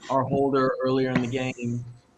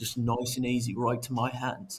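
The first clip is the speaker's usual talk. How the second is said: put-on Australian accent, plainly delivered; 5 dB quieter than usual. Retelling what the holder's teammate said before the kick: imitating an australian accent. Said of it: "in that Australian accent, he just goes".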